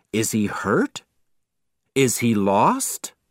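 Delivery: ordinary delivery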